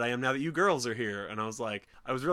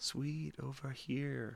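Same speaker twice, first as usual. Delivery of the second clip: put-on quiet, whispery doll voice; 10 dB quieter than usual. Retelling how a doll whispers to a character: imitating a doll's quiet whisper. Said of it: "quiet and whispery".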